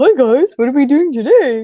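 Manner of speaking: goofy, dorky pet voice, high and loud. The speaker shows how she and a partner imagine their pet talking: really dorky voice. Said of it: "imagine River as having like this really dorky voice".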